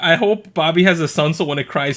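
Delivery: ordinary delivery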